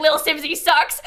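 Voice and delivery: put-on computerized robot narration voice. Retelling a TikTok video about herself: imitating TikTok robot voice. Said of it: "I get this robot being like".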